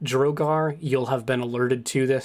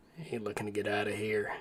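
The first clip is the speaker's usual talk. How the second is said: very quiet mutter under the breath; 3 semitones lower, 10 dB quieter than usual. A game master voices a man handing over a note, muttered under his breath. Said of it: "under his breath says".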